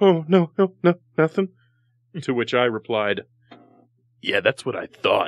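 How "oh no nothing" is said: mock fearful cowering voice, much higher pitch. Retelling a confrontation, quoting the woman's reply: imitating a fearful, cowering reply. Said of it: "she cowered in fear".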